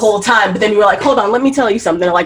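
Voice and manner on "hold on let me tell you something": imitated getting upset. Acting out suddenly getting upset in a conversation: imitating getting upset.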